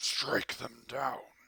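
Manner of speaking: infernal, commanding demonic voice from the underworld. Narrating to the group a voice they hear in their heads, deep infernal voice. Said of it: "persistence in a deep infernal voice".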